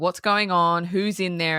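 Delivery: ordinary talk, nothing marked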